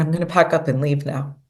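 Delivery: ordinary delivery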